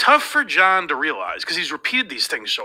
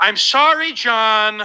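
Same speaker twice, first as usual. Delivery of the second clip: put-on earnest sincerity, raised voice; 7 semitones higher, 5 dB louder than usual. Acting out an imagined scene, asked to say it like he means it. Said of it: "Say it like you mean it".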